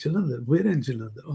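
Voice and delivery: ordinary talk, nothing marked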